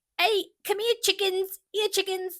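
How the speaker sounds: put-on calling out in Cockney accent, pitched very high. Explaining a writer's caricature of Fanny, quoting her in Fanny's Cockney accent. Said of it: "how she talked like this".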